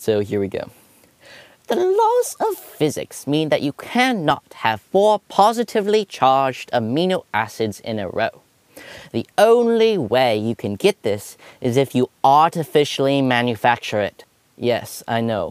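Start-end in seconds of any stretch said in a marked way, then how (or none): 1.7-14.3 fake, swooping put-on British accent. Voicing a Norwegian guy's explanation of amino acids in a put-on British accent. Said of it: "I'm going to give him a British accent".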